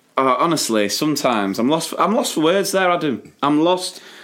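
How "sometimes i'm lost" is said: plain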